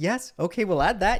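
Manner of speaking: mock bright, sunny, agreeable, very happy, high chirpy voice. Retelling what a man said to them, imitating a very happy voice. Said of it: "he's with like this very happy voice".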